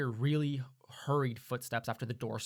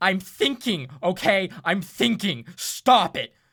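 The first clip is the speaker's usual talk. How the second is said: swooping, very loud, high raised-voice outburst; 7 semitones higher, 13 dB louder than usual. Bailey raises his voice at the elf, Bailey raising his voice. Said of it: "Bailey like raises his voice like this".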